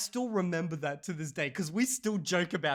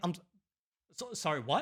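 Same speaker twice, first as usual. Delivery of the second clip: baffled, caught-off-guard, stumbling delivery; 5 dB quieter than usual. Retelling own reply to a stranger's sudden correction: imitating own confused reply. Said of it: "I was just so confused".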